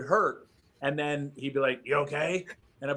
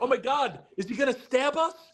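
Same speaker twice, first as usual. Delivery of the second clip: very high, panicked blurt in full panic; 10 semitones higher than usual. Retelling wrestlers in the corner fearing a stab: imitating a panicked wrestler. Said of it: "in full panic mode".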